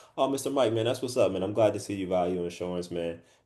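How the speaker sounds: relaxed, easygoing, soft, laid-back chill tone. Showing how to greet an insurance customer without sounding like a sales rep, laid-back chill tone. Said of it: "I'm laid back, I'm chill, I'm cool".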